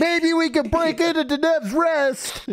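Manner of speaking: mock very high, shrill, ear-splitting yell. Mocking someone who yelled a plan into their ear, imitating someone yelling. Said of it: "my ear as if it's like you're trying".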